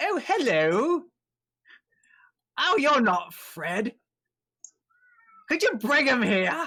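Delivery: very high, loud tiny skeleton creature voice. A little skeleton thing looks up at the visitors and speaks, in a little skeleton voice. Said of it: "the little skeleton thing looks up. He goes".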